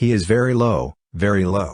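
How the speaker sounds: usual speaking voice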